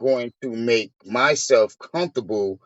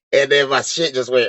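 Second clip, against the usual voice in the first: ordinary delivery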